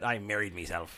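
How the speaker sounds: swaggering put-on pirate voice. Reading a self-wedding product name aloud, joking: pirate voice. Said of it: "sounds like a pirate, doesn't it?".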